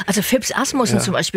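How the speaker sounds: ordinary talk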